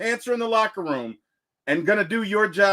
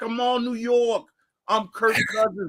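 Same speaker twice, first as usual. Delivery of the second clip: boastful, bragging delivery; 3 semitones higher than usual. Imitating Kirk Cousins claiming a new team's city: imitating Kirk Cousins. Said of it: "He's gonna be like".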